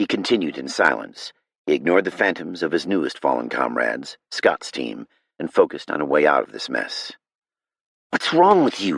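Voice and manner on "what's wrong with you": seething, angry hiss, rising anger, pitched up. Narrator reading a woman's line to a man over the steering wheel, angry hiss. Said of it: "She hissed over the steering wheel, anger rising in her voice".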